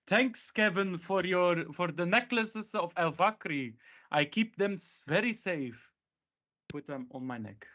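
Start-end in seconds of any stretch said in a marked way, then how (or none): 0.1-5.9 very loud, high, theatrical calling out. Calling out in character from outside the house: very loud. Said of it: "I say very loud".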